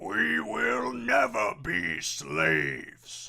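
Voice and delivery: very loud, rough, strangled, constricted orc cry. Demonstrating a voice-acting tip, a constricted-throat orc voice. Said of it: "a good orc voice".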